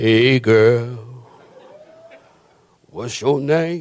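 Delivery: put-on low swooping man's voice, girl drawn out.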